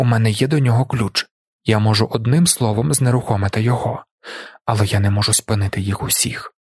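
ordinary talk

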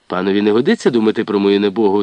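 ordinary delivery, nothing marked

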